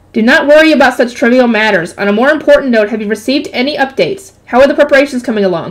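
ordinary delivery

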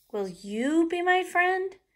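"you" shouted with loud stress. Reading a story where Penelope asks a goldfish, loud stressed you. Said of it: "I said it like that because you is in shouty caps".

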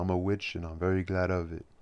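ordinary delivery, nothing marked

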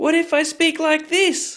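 very high pitched voice. Testing an app that repeats speech higher, speak in a higher voice. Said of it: "what if I already speak in a higher voice".

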